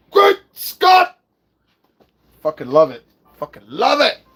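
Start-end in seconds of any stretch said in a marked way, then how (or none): 0.2-1.2 very high, loud, freaked-out outburst. Retelling a movie scene, imitating Doc Brown freaked out. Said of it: "He's so, like, freaked out when he says it".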